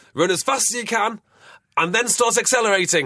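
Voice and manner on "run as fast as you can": put-on Geordie accent with voice a bit higher. Describing a Lions DVD, the speaker quotes Austin Healey in a Geordie accent. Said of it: "in a Geordie accent".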